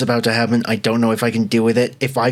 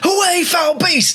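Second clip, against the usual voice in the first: very high, screaming shriek. Voicing a character who throws an iron rod at a cackle: screaming in character. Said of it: "Isaac immediately screams and goes".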